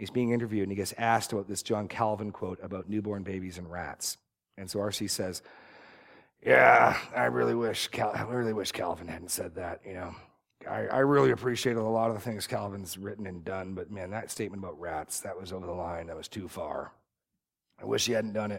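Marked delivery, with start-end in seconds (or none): 6.4-18.6 put-on, really gravelly voice. You retell R.C.'s interview answer about a John Calvin quote, imitating R.C.'s really gravelly voice. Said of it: "He's got this really gravelly voice".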